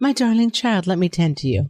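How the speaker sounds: fake fussing caregiver voice. Imagining a mother tending a sick child: Florence Nightingale voice. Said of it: "Florence Nightingale-ing and being like".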